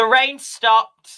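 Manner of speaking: very high, brash, loud, shrill call. In character during a sermon, passing the bench, with a loud shout. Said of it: "I will just loudly go".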